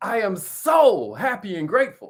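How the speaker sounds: emotion-filled, heartfelt, slow, swooping, very drawn out. Leading a group to repeat an affirmation: said with emotion. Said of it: "You gotta say it with emotion".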